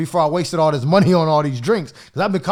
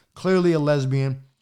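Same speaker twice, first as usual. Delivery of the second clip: normal talking voice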